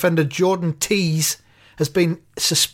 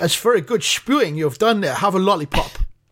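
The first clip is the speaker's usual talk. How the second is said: put-on Dutch accent; 2 semitones higher than usual. Imitating dutch parents praising a baby for vomiting: put-on dutch accent. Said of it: "You're better at a Dutch".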